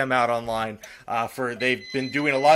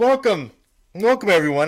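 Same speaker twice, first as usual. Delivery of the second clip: pitched-up words pushed out past stifled hiccups; 6 semitones higher, 5 dB louder than usual. Podcast host opening the new episode, stifling hiccups while talking. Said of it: "as I try to stifle my hiccups".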